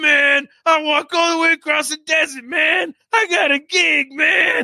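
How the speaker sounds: hollered, loud, shouting put-on jazz-musician character voice. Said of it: "the the [name] voice".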